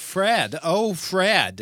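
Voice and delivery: woman's high yelling voice, one word drawn out. Recounting a neighbor's report of a woman yelling that night: imitating a woman yelling. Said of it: "That's my woman's voice yelling".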